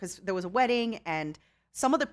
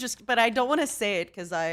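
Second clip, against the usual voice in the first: normal talking voice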